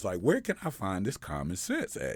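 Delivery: ordinary delivery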